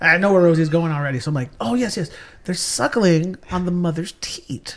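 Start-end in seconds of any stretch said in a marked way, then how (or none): 1.6-4.8 terribly correct, overly proper, posh delivery. Retelling an answer to kids on a farm tour: imitating an overly proper voice. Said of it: "Very proper".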